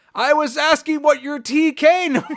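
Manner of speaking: imitated shout. Recapping a TV episode, retelling one character shouting at another, retelling a shout. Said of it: "And he shouts at him".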